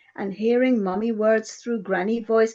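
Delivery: ordinary delivery, nothing marked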